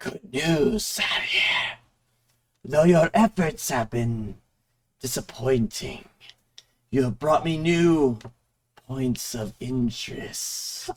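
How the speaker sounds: sibilant, low, hissing deep baritone voice, spectral. Game narrator voices a skull apparition addressing the party: hissing baritone. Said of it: "The apparition speaks in a hissing baritone".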